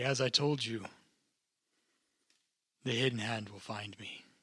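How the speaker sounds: ordinary talk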